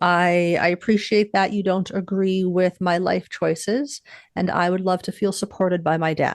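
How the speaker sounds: usual speaking voice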